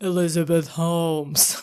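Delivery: low, quiet, soft, deep put-on baritone voice. Confirm the name to a listener who asks why the voice, in a deep Elizabeth Holmes voice. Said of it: "Why are you doing a voice like that?".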